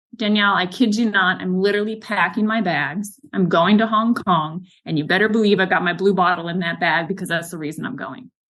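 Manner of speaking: normal talking voice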